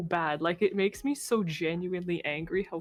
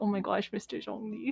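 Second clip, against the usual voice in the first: put-on swooning voice; 2 semitones higher than usual. Retelling own reaction when the character appears: imitating own swooning.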